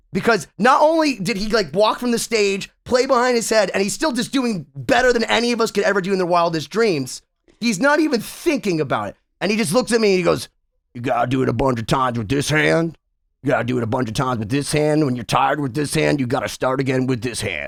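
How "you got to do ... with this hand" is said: mock bone-dry deadpan, very low voice.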